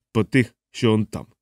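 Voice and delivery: ordinary delivery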